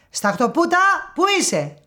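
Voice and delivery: screechy, shrill, very high calling voices. Two voices call out from inside an opened storybook; shrill voices. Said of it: "δύο τσιριχτές φωνές".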